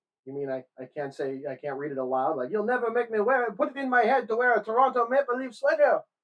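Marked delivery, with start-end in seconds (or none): 2.5-6.0 put-on Quebecois accent on English, pitched up. Reading aloud from a Canadiens book: Roch Carrier impression. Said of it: "That's my best Rock Carrier impression".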